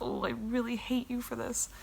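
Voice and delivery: joking tone. Speaker retelling what she told her as a joke, retelling a joking tone. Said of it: "I said it with an, like a light air, like I was joking".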